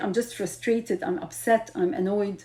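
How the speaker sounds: plain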